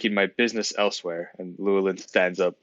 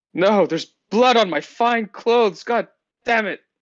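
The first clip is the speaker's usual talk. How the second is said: loud, shrill scream pitched way up; 14 semitones higher, 7 dB louder than usual. Reacting in character to being stabbed in the back: screaming. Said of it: "are you screaming about the pain".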